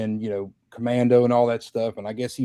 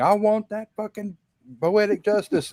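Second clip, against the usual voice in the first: raised, very high-pitched, demanding voice; 9 semitones higher than usual. Retelling a stranger storming in and demanding a movie: imitating a raised voice. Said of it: "with an elevated voice saying".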